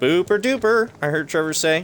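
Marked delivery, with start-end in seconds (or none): 0.0-0.9 gushing, high, loud put-on enthusiasm. Quoting a phrase someone said, adding enthusiasm he didn't have. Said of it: "the enthusiasm I added to it".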